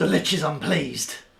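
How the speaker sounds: loud, resonant voice. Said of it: "to make my voice boom".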